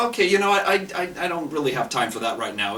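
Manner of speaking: normal talking voice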